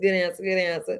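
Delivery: ordinary talk, nothing marked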